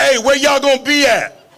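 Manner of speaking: high-pitched hollering, shouted calling out. Recalling running out of the house calling to friends, retelling a scream to friends. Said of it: "I screamed to my friends".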